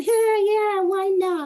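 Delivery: high, loud, carefree shrugging voice.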